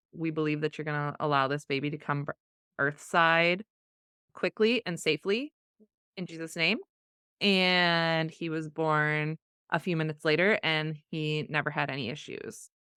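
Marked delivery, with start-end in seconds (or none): none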